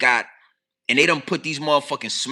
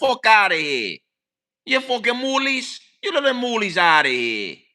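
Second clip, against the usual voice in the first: put-on Italian-American accent, shown off; 8 semitones higher than usual. Showing off the accents they can do: Italian accent impression. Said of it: "I could talk like an Italian".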